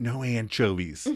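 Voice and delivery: put-on whisper. Retelling a scene where a character whispers his pizza order: imitating Ross whispering. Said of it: "And he whispers".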